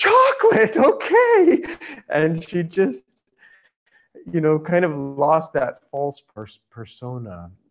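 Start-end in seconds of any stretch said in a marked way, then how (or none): 0.0-1.6 very high, shrill, bouncing, swooping excited shout. Retelling what a nun yelled when another nun came by, retelling a yell. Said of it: "she yelled".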